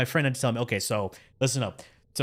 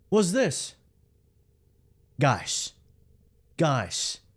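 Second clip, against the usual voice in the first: slow, confused, drawn-out voice, sounding puzzled; 2 semitones higher than usual. Imitating a confused streamer looking at something: Asmongold impression. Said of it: "That's my Asmongold impression".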